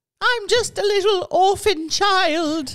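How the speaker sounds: very high, loud put-on English accent. Explaining how they always talk, the speaker quotes them in a put-on English accent. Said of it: "They always talk in an English accent".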